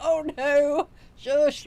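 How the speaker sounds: high, loud exclaimed shush. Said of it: "I'd be like".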